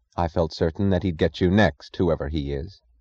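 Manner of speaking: ordinary talk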